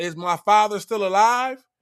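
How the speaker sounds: normal talking voice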